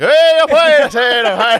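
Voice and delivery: put-on high, loud Irish accent. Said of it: "and then you add another".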